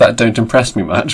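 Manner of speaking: ordinary delivery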